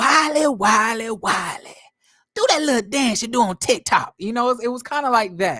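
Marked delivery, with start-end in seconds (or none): 0.0-4.1 drunk older woman voice impression. Showing an impression of Precious at a beach house: drunk auntie voice impression. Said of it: "it went a little bit something like this".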